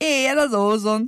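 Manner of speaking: loud booming voice. Another of the group calls out, booming. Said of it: "harsogott Dani".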